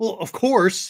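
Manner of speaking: mock condescending tone. Retelling a student's reply about the next seminar: imitating Phil's condescending tone. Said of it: "this little condescending tone to his voice".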